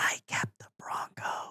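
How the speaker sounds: slow, drawn-out, very quiet, soft whisper. Acting out a confession whispered to a wife on her deathbed: imitating a whisper. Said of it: "I'll whisper in her ear".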